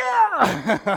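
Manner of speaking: loud, high jubilant yell. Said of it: "Inside, I was going".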